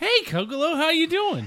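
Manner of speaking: very high, excited, swooping sing-song voice. A player's character greets Kokolo, perched on Chris's shoulder, high-pitched and excited. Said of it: "I don't know why my voice got so high-pitched".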